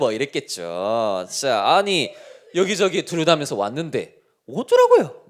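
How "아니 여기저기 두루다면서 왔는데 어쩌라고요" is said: snide, mocking, sneering sing-song sarcasm. During a sermon, acting out a retort in a mock-sarcastic sneering tone. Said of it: "뭐 이렇게 비아냥거리면서 했겠죠".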